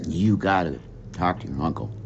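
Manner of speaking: whispering. Retelling what the chief told him, not wanting to upset her: retold whisper. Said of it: "in a whisper".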